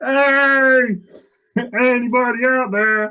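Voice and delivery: very high, very slow, drawn-out full-lung shout. Calling out in character to find anyone nearby: shouting at the top of lungs. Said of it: "at the top of my lungs gonna just shout".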